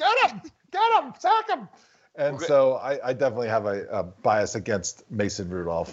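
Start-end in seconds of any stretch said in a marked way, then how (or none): 0.0-1.7 put-on old lady voice, much higher. Cheering against a player he dislikes while watching, old lady voice. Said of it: "I sounded like that old lady".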